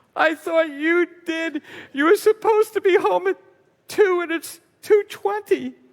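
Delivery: very high-pitched, tearful, crying woman's voice. Retelling calling mom from a payphone and her answer: imitating mom in crying voice. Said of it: "(In a crying voice)".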